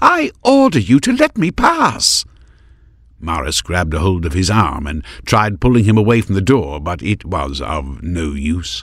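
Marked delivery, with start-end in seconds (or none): 0.0-2.3 very high, swooping, drawn-out cry. Narrator voicing Maris as Heron blocks her way, crying out. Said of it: "she cried".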